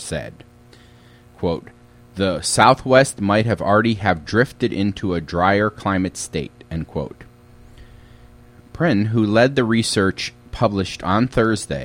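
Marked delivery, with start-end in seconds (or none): none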